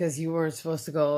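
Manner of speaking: plain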